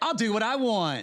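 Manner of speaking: acted defiant, dismissive. Retelling how someone answers about his drinking: imitating a defiant reply. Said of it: "And he'll say".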